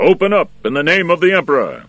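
very loud, high, ringing call. The royal guards' captain at the prison gates, calling out loudly. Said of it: "The captain called out loudly".

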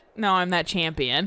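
plain

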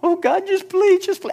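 put-on begging. Speaker urging listeners not to beg god, then acting it out, mock begging. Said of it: "Do not beg God".

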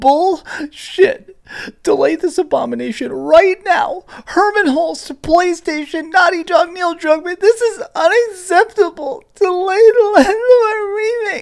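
big, over-the-top, very high, exaggerated whine. Reading aloud a tweet from a guy having a bad day, exaggerated whiny voice. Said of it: "I'm going to put on my big old whiny voice for this tweet".

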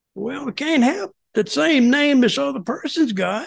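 put-on Southern accent, pitched high. Retelling a call from the company's legal counsel: imitating lawyer's Southern accent. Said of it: "he had a Southern accent".

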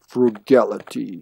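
deep, quiet announcer-style delivery. Imagining a joke scene about eating a sandwich: Mortal Kombat narrator voice. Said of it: "the narrator goes".

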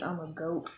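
soft, quiet mumble, barely audible. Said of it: "You gotta talk a little louder".

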